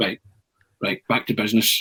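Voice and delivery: ordinary talk, nothing marked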